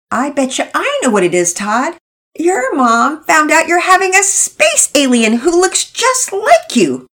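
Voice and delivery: very high, slow, spoken through fits of laughter. Interrupting the conversation, she speaks through fits of laughter. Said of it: "Penelope interrupted through fits of laughter".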